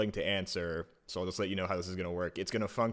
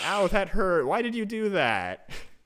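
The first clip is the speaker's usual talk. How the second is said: put-on very high small child's voice; 12 semitones higher, 9 dB louder than usual. A game master narrates a voice speaking in the players' heads, childlike voice. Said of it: "you hear a childlike voice in your head says".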